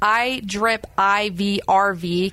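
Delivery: very slow, deliberate over every letter. Host thanking event sponsors, saying one sponsor's name very slowly. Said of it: "Got to say that slow".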